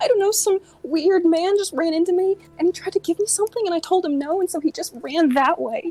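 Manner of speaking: very high, scared, innocent-sounding put-on voice. A player's character tells a man what happened, acting very scared. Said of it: "I'm gonna look very scared and be like".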